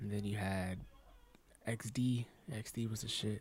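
soft whisper. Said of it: "Why are you whispering, dude?".

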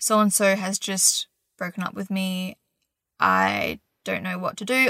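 ordinary delivery

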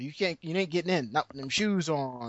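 put-on cartoon bouncer voice. Retelling a bouncer refusing entry, imitating a guy from The Boondocks. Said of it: "like he was the guy from the Boondocks going".

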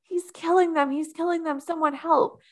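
mock, very high, shrill, rushed screaming cry. Retelling a scene where a character runs outside: imitating Zach screaming. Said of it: "He starts screaming".

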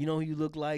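put-on low-key New York Italian accent. Retelling what a man said to the speaker: low-key New York Italian accent. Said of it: "talked with like a low key like New York Italian ish accent".

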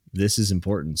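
ordinary talk

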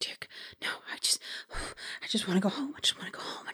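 soft, whispered muttering under the breath. Game master voices Evan as the players approach him: soft muttering. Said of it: "muttering in a very soft tone".

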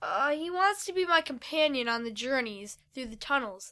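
ordinary delivery, nothing marked

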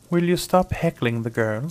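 haughty woman's voice. A talking sparrow addresses a dog: haughty woman's voice. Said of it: "Said the sparrow haughtily in a woman's voice".

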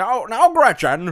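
put-on shrill, very high, very loud, booming old-Hollywood leading man. Doing an impression for the listeners: Jimmy Stewart impression. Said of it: "best Jimmy Stewart impressions".

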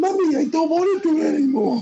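put-on very high, tearful little girl voice. Imagining another speaker's ten-year-old daughter pleading: mock crying child.

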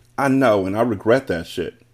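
ordinary delivery

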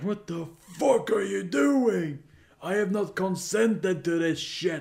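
furious high-pitched shout. Speaker recounts shoving a woman away and yelling at her; retelling a yell. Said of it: "start yelling at her like".

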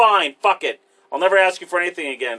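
put-on angry, pissed-off, fed-up, done tone. Retelling a comedy bit where he snaps at his girlfriend: imitating a pissed-off retort. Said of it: "So he's pissed at her".

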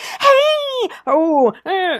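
very high, playful, swooping stage voice. Imitating own stand-up delivery, playing with the voice. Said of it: "play with my voice".

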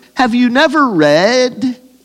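high, slow, sarcastic tone. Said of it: "notice the sarcasm in Jesus' voice".

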